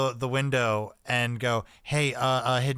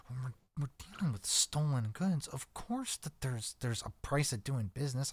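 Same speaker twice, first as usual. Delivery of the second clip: barely audible, very soft, secretive hushed whisper; 10 dB quieter than usual. In a scene about dealing in stolen goods, whispering even lower. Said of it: "I'm whispering this even even lower".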